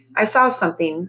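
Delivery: plain reading voice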